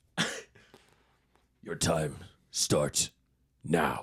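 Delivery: low, slow, sinister, menacing voice.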